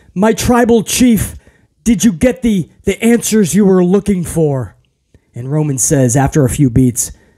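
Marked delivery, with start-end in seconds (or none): 0.1-4.7 halting, quavering, trembling, hesitant voice. Retelling a wrestling segment, imitating Paul Heyman's trembling voice. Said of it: "with his voice trembling, Paul Heyman says".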